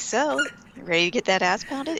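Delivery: casual, mild-mannered. Retelling a line from a documentary, imitating a mild tone of voice. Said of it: "his mild tone of voice".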